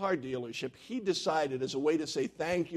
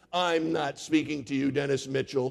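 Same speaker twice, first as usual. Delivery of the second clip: lofty, haughty, stuck-up, superior, dismissive tone; 2 semitones lower than usual. Retelling a comic strip, a little girl speaks to dennis as he walks by: haughty. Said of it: "she says haughtily".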